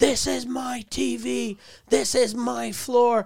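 slow, high, drawn-out angry shouting. Retelling audio of a man hitting a woman, imitating an angry yell. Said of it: "And he's yelling".

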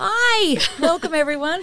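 very high, bubbly, overexcited voice. Welcoming everyone at the start of a first podcast: high-pitched and overexcited. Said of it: "that was a bit high-pitched, a little bit overexcited".

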